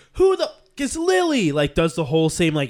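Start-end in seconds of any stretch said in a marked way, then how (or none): 0.2-1.6 shrill, very high-pitched, furious yell. Retelling how the character gets up at brunch and yells: imitating an angry yell. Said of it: "she yells".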